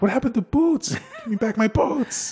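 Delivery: mock pleading child voice, very high.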